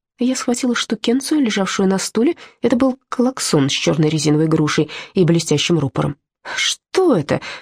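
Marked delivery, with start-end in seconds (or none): 6.6-7.4 grudging, grumbling tone. The narrator picks up a horn and asks the gorilla, grumbled. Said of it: "буркнула я".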